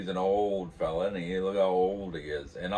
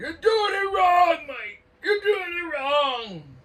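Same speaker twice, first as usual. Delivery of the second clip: very high, loud, repeated yelling; 8 dB louder than usual. Retelling how John yelled at him from his perch, imitating John yelling. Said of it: "he's up there yelling in his perch".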